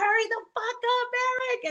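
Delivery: very high, shrill, piercing yell. A woman recalling yelling at Eric to hurry up, retelling her own yell. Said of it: "I just remember yelling at him".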